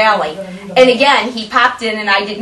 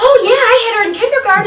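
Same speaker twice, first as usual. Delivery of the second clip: put-on high, loud, eager little kid voice. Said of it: "the kids are like".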